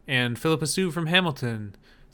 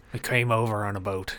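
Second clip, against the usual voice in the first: put-on pirate accent; 5 semitones lower than usual. In a group bit about Liam Neeson's American accent, doing a Liam Neeson pirate voice. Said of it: "He's turning into a pirate".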